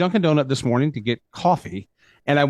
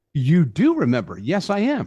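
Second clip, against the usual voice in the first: ordinary talk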